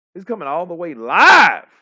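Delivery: high, loud hyped-up shout.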